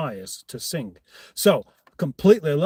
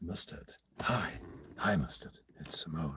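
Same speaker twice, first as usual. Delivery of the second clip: very quiet, breathy near-whisper; 11 semitones lower, 14 dB quieter than usual. Doing an impression of Simone greeting Mustard: impression of Simone. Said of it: "that's my impression of Simone".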